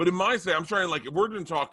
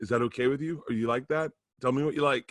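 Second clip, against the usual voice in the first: anxious, hesitant, eager, nervous voice; 2 semitones lower than usual. Acting out an impression of himself checking in on a partner. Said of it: "this is my impression of me and you".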